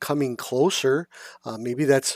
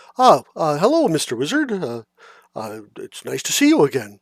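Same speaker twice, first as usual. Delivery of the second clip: raised character voice with wide swooping pitch; 5 dB louder than usual. Voicing Glabagool greeting the wizard during a long rest: Glabagool voice. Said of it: "Glabagool comes up to you and he goes".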